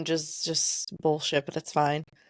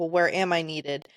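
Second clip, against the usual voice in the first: ordinary talk, nothing marked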